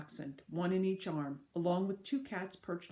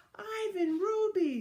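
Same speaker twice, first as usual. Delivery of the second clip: joyful, delighted calling out, pitched very high; 14 semitones higher, 6 dB louder than usual. Reading a story aloud, Snickers calls to Ivan and Ruby, delighted. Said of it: "Snickers calls in delighted voice".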